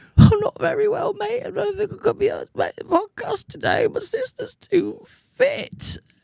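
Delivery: put-on sick voice, very high and soft. Imitating someone's phone call earlier, in a put-on sick voice. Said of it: "He did his poorly voice on the phone to me earlier. He's he's did his little sicky voice. He's all".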